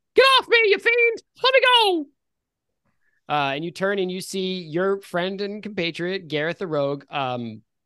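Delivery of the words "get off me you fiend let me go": put-on very high, raucous, shrill old-woman screaming cries. Voicing an old lady pinned down by a rogue: old lady screaming. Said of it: "screaming out".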